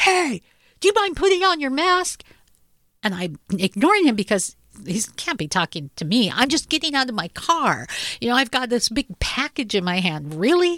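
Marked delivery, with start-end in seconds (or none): 0.0-2.2 put-on, very high, shrill shrieking scream. Retelling what a guy in line yelled at the speaker, imitating him screaming. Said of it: "a guy in line screams at me and says".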